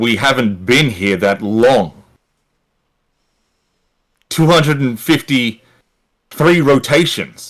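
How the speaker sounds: angry character voice. Voicing a character who looks at the player with anger: angry character. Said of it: "he looks at you with an angry expression on his face and he goes".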